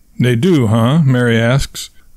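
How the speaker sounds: ordinary delivery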